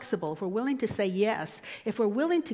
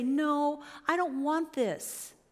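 put-on drawn-out whine, voice climbing higher; 4 semitones higher than usual. Acting out refusing life's call to move forward: mock whiny, voice going up. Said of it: "did you hear my voice go up? Whiny".

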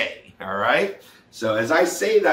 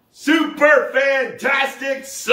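full-volume shout, very high-pitched; 11 semitones higher than usual. Leading the group's answer to how everyone is doing, shouting as loud as possible. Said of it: "I want you to say as loud as you can".

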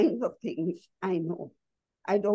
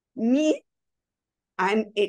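play-acted, defiant, challenging, pointed comeback; 4 dB louder than usual. Retelling how an old man in the park asked her age: imitating a challenging question. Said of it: "very challengingly says".

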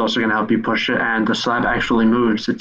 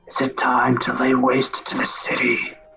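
hushed whisper. Voicing an undead figure in a catacomb asking the party: whispering. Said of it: "just whispers".

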